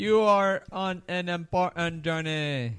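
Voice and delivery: deliberately bad put-on Jamaican accent. Introducing this week's battle as a joke: bad put-on Jamaican accent. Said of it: "That was my Jamaican".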